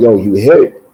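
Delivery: ordinary delivery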